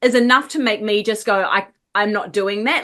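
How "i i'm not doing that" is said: normal talking voice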